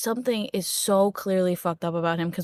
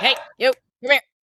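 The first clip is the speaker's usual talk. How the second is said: loud, snappish, dog-like snapping bark; 4 semitones higher, 5 dB louder than usual. Calling another character over in character: snapping like a dog. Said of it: "I'm snapping at you like a dog".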